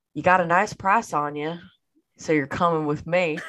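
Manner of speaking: put-on cowboy accent. Describing an edited picture, speaker voices Cad Bane's line: Cad Bane line, put-on accent. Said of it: "I don't know why I did that accent".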